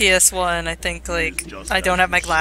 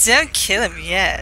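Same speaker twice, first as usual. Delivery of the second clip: mock-flirty villain voice, slower; 4 dB louder than usual. Commenting on a game villain, the speaker does his line: flirty Liquid Snake impression. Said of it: "He always sounds so flirty".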